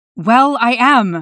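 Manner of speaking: hissed delivery. A man answers Nightwing, who doubts he is just passing through: hissing. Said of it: "the man hissed".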